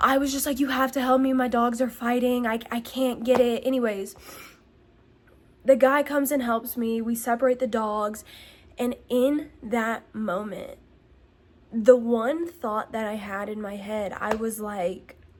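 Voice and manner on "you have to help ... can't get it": panicky begging tone. Retelling asking lawn workers for help in shock: retelling a panicked plea. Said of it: "I was in so much shock".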